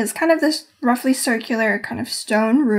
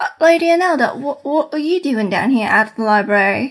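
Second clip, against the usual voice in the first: put-on rough, halting, heavy broken Cockney accent; 3 semitones higher than usual. Voicing the head chef Pogren greeting the librarian: broken Cockney accent. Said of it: "he talks in the very, like, Cockney".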